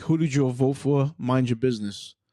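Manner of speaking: ordinary talk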